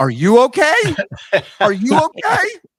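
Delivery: upset, very high cracking voice. Retelling answering daughters who ask if okay: imitating own cracking voice. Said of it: "My voice is cracking".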